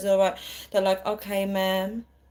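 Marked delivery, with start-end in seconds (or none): 1.1-2.0 put-on calm American voice, quieter. Recalling American customer service calls, imitating a calm American. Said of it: "Americans are just so calm in their voice".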